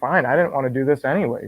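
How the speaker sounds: ordinary delivery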